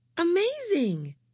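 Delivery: very high, astonished, gasped exclamation. An assistant reacts to the dog skeleton found under the ashes; gasping. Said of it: "gasped his assistant".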